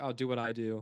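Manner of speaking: usual speaking voice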